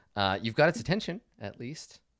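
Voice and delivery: ordinary talk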